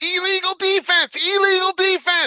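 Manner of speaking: mock very high-pitched, loud, frantic screaming. Speaker recalls sitting on the bench with Brakowski, imitating his screaming. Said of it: "he was screaming".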